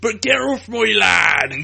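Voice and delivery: very loud put-on Bristol accent. Showing listeners how they do the accent, Bristol accent. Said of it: "This is me doing a Bristol accent".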